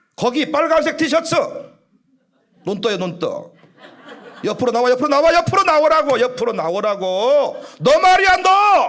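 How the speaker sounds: high, loud, preacher-style yelling. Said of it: "막 이래".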